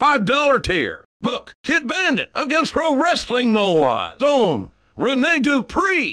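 put-on animated, high, sing-song robot voice. Reading out supporter names and tiers in a put-on voice: Robot J R voice. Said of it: "We're reading these in Robot J R's voice".

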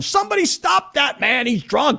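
high-pitched screaming sports play-by-play announcer call. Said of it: "Kevin Harlan screaming".

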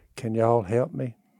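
small, soft, meek voice. Retelling how a woman walked back in asking for help, imitating a little meek voice. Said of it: "in a little meek voice".

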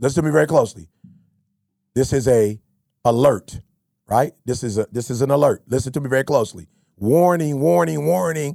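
slow, measured, deliberate, spelled-out delivery. Repeating a warning one more time to the listener, talking slow. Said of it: "I'm going to talk slow".

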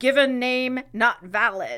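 ordinary talk, nothing marked

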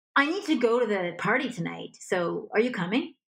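pushy, commanding, dominating, high-energy demanding voice. Speaker demonstrating a demand instead of a request, dominating, high energy. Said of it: "a higher energy would be more dominating".

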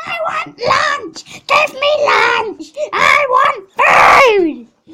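very high, very loud, slow screaming tantrum shout. Speaker retells a sibling demanding lunch from their mum, imitating her going insane. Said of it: "She just went insane".

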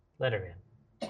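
low, soft, darkly amused chuckling delivery. Voicing a figure at the back of a chamber: mordant, low chuckling voice. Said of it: "emits a sort of a mordant, low chuckle".

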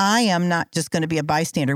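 normal talking voice

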